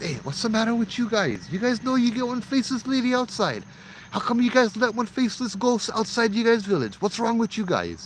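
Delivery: put-on Hawaiian pidgin speech, very high pitch. Telling a ghost story where a man questions an old japanese man, in a hawaiian accent. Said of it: "I'll say this kind of Hawaiian".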